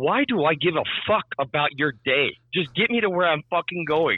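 exasperated, fed-up outburst. Passenger recounts the driver telling his story during a ride, retelling irritated words. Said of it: "I was just so irritated".

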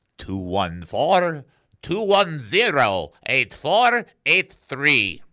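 put-on Ukrainian accent. Giving the show's text line number again, the host does a Ukrainian accent. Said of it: "What accent was that, [name]?".

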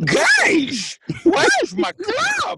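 very high, loud, slow monster voice shout. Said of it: "That's all I got".

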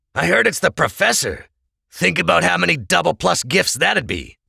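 high, greedy, grasping, covetous tone.

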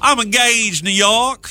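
high-pitched put-on Southern accent. Retelling what a texas woman called out her window, in a southern accent. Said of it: "Let me try that again in a Southern accent".

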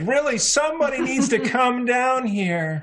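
high-pitched yelling. Voicing a character calling for someone to come down: yelling. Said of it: "I'm kind of yelling at this point".

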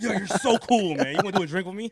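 aggressive, very loud, pushy voice. Imitating how coked-up people at parties talk: imitating coked-up partygoers. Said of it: "that's how they talk. They be so aggressive".

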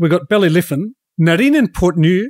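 poor, bad put-on Scottish accent. Listing golf courses in conversation, in a bad Scottish accent. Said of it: "I said that with a bad Scottish accent".

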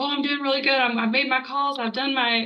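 put-on laid-on country accent. Quoting a typical person's reply to Matt's call, in a country accent. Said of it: "I don't know why I got really country there".

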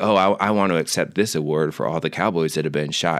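usual speaking voice

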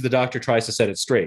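ordinary talk

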